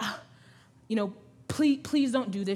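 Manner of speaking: put-on pleading, begging tone. Retelling what a picketer said outside the clinic: imitating someone pleading. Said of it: "She's pleading with me, pleading with me".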